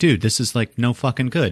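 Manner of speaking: ordinary delivery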